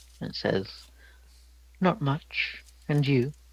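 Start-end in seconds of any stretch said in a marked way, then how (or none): 1.8-3.3 woman's voice, high and slow. Voicing a bird that answers a player: lady's voice from a bird. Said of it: "you hear a lady's voice come from the bird".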